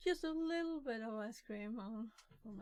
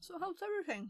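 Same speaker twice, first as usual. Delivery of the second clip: mouth-full chewing speech, slightly higher pitch; 7 semitones higher, 3 dB louder than usual. Chatting after getting some sweets and nuts, talking with food in mouth. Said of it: "Sorry for talking with food in my mouth".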